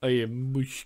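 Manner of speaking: put-on Russian accent. Repeating a funny phrase as a joke: put-on russian accent. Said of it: "I'm saying it like I'm, like, Russian".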